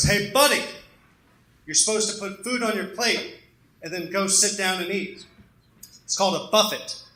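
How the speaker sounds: furious, angry scolding outburst. Retelling what the speaker's uncle said to an old man, acting out a furious outburst. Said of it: "My uncle gets all furious and he goes".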